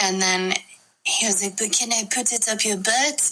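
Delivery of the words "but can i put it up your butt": casual, put-on French accent. Telling a story, the speaker quotes what a man said, french accent. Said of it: "like in a French accent".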